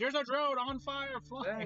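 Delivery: put-on group screaming. Recalling watching drones fly, speaker quotes what everyone was screaming; retelling everyone screaming. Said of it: "everyone's screaming like".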